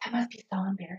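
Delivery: snide, snotty hushed whisper. Retelling what snotty friends said to themselves: imitating a whisper. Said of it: "whisper to themselves".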